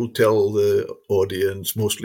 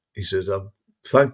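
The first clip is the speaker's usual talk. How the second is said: normal talking voice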